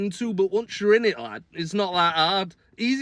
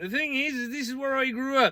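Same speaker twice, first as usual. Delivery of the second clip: English West Country accent; 4 semitones higher, 4 dB quieter than usual. Explaining the accent of where the speaker grew up, in a West Country accent. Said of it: "I could also have a West Country accent".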